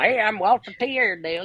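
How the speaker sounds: high puppet voice with country twang.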